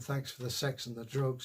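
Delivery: ordinary talk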